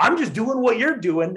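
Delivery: mock very high, shrill yelling. Retelling a man yelling at the speaker, imitating someone yelling. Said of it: "he just keeps yelling".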